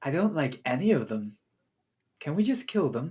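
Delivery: hushed, quiet half-whisper. Narrating a game scene, the speaker voices a dryad half-whispering to the others. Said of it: "you hear one of the dryads whisper".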